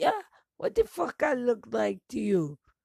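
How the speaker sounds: angry put-on Jamaican accent. Retelling a reply to people asking if the speaker is American, put-on Jamaican accent. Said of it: "I pulled out the Jamaican accent".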